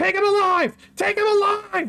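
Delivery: shrill, high-pitched screaming voice. A priest in the back screams up and down at the others: screaming. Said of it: "as he's screaming up and down".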